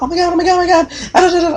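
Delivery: squealing, starstruck, high, loud fangirl voice.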